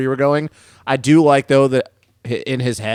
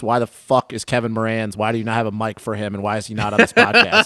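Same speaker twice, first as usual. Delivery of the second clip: plain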